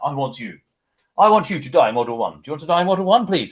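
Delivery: put-on British accent. Imitating Lord Kitchener's recruiting call to the class: British accent as Lord Kitchener. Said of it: "I would say in a British accent".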